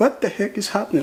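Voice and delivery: high voice, words broken up by laughter. Retelling the moment a car hit them: laughing while talking. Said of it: "I'm sorry, I'm laughing".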